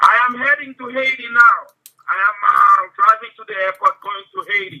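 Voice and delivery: put-on Jamaican accent. Answering whether he has been to Haiti, in a fake Jamaican accent. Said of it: "Why does your accent keep going in and out".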